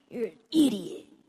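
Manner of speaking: loud, raspy cartoon bully voice. Recalling the hardest voice they did, raspy Terrence voice. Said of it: "like it was all really like raspy".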